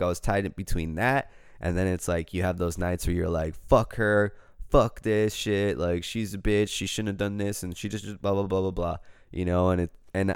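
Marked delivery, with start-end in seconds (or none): none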